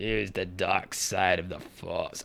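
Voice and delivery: voice dropped low and murmured. Talking about voice acting, showing off an impression: Emperor Palpatine impression. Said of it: "I actually do a better Emp- Emperor Palpatine".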